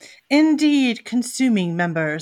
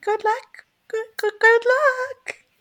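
minuscule, very high, slow little voice; 13 semitones higher than usual. As the party leaves the clearing, Jacques speaks from a log in a teeny tiny voice. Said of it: "you hear a teeny tiny little voice".

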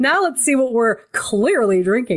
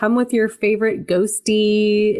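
usual speaking voice

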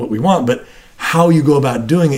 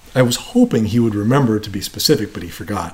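ordinary talk, nothing marked

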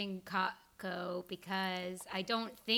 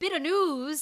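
loud, high, booming put-on Irish accent; 8 semitones higher, 10 dB louder than usual. Saying the segment name after being asked to: irish accent. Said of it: "Do the Irish one".

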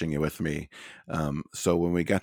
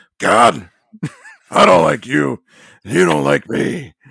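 very loud, rough, blaring boss voice, belted out; 9 semitones higher, 13 dB louder than usual. Retelling how he knelt with his family and prayed to God, do the Vince voice. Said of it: "his Vince voice".

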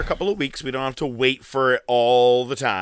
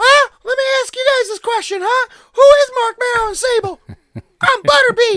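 really high, raised, squeaky voice; 7 dB louder than usual. Recalling how he sounded at Raw that night, the speaker quotes him: imitating his very high-pitched voice. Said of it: "Really high pitch".

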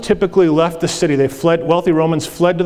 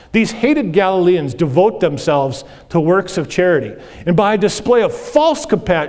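usual speaking voice

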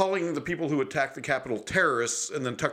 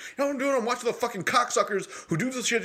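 raging, furious ranting outburst, pitched very high; 10 semitones higher than usual. Retelling his own past answer on the phone: imitating himself going nuts. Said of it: "And I went nuts on him".

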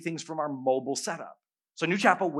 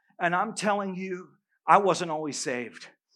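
usual speaking voice

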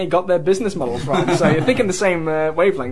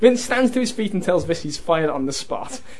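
plain

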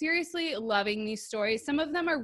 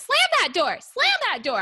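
sing-song, high-pitched, loud, swooping voice; 9 semitones higher, 8 dB louder than usual. In an ad read, mimicking Elise: imitating Elise's high voice. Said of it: "every time you talk in my voice, it's so high pitched".

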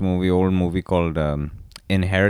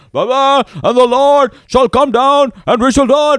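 mock crazed scream, higher pitched and louder; 11 dB louder than usual. Retelling a losing lawyer shouting scripture in the courtroom: imitating someone screaming like a crazy person. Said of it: "he's just screaming like a crazy person".

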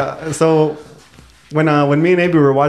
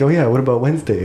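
ordinary talk

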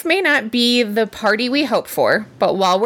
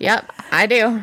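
lacklustre, half-hearted, flat, unenthusiastic tone. Answering the other speaker's check before a positive segment, sounding unhappy about it. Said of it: "You don't sound happy about this".

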